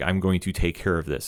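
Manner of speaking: put-on cold, calculating voice. Retelling a scene where the character answers an order: imitating Walker, cold and calculating. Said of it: "very cold and calculating".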